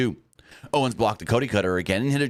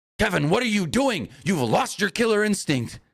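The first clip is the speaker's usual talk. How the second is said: very high-pitched, yelled, berating holler; 10 semitones higher than usual. Recapping a wrestling match, the speaker is imitating Wade Barrett yelling at Owens. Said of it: "Wade Barrett's yelling at him like".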